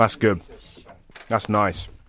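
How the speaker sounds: mid-chew, talking with mouth full. Asked to try a steak and be honest, the taster answers while talking with mouth full. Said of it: "It's all in my mouthful".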